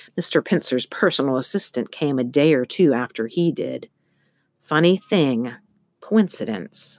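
ordinary delivery

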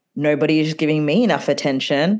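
normal talking voice

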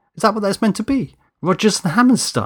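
very high, swooping, incredulous outburst. Danny hears a show tunes album on the speaker and asks, incredulous. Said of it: "He said incredulously".

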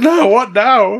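high, slow worried cry. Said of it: "I was like".

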